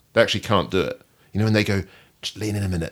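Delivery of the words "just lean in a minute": put-on loud, full-volume fake whisper. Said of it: "and then just speak in full volume".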